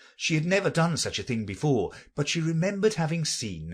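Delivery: plain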